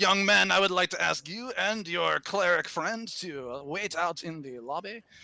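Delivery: over-the-top, ridiculous, exaggerated put-on French accent. Speaking to a young man in an exaggerated french accent. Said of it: "my ridiculous French accents".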